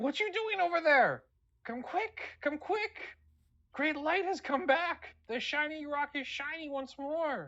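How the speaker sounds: very high, screeching, screaming creature cry. Voicing an older kobold calling the others back: kobold screaming. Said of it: "a familiar voice screaming at you".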